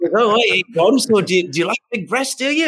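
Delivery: horrible fake British accent, pitched very high. Imitating a dance company agent with a phony british accent. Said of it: "I have a horrible fake British accent".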